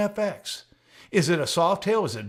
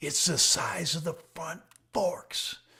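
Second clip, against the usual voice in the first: mock, secretive, close whisper; 4 dB quieter than usual. Retelling what a man whispered after leaning in close, a close whisper. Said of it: "got real close and whispered".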